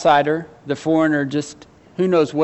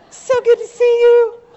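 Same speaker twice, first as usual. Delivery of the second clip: put-on excited voice, much higher; 7 dB louder than usual. Picturing his wife's sisters greeting Naomi on her return: imitating excited greeting. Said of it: "I'm trying".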